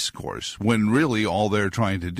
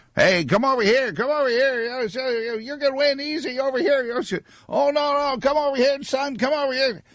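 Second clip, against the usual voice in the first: very high, hustling carnival barker voice. Describing the county fair midway, calling people over: carnival barker voice. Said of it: "films that depict carnival barkers".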